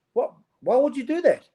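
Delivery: high, disbelieving, incredulous outburst. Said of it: "I'm like".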